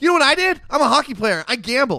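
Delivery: high, loud flirty voice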